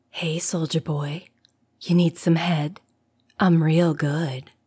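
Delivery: soft, husky, feminine whisper. Reading a story, a voice from the darkness calls to a passing soldier, soft husky whisper. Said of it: "very feminine voice called out in a husky whisper".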